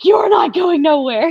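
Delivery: high-pitched, crying, sobbing scream. Retelling clinging to the steering wheel while mom says let go; reenacted crying and screaming. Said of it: "I'm crying and screaming".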